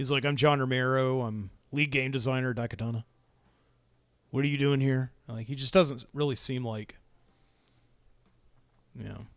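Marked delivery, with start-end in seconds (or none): 0.2-5.1 put-on arrogant voice. Retelling how a game designer sounded in a news report: arrogant John Romero impression. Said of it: "comes across ... as an incredibly arrogant guy".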